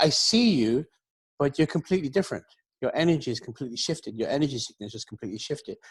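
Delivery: ordinary talk, nothing marked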